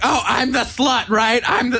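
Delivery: high, slow, drawn-out, freaked-out squeal. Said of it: "she'd be freaking out, like".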